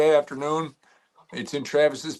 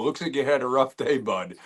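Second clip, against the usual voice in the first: usual speaking voice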